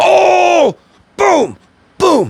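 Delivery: very high, thrilled, drawn-out, excited scream. Right after dead nailing one, the speaker reacts: screaming.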